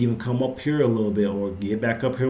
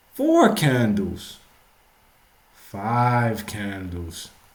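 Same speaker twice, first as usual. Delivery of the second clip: put-on very slow, sing-song kids' TV counting, "five" stretched. Counting candles on the daily chart one by one: Sesame Street counting voice. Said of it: "I'm gonna have to say it like this is like the Sesame Street".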